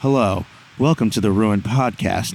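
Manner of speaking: sedated-sounding, calm, monotone public radio host voice. Joking about public radio voices, opening the podcast: NPR radio voice. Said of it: "start doing N P R voices".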